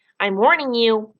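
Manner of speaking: fierce, bold delivery. Freak, trying to stand up in the coal pile, gives a warning, fierce and bold. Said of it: "he says in that fierce, bold way he has".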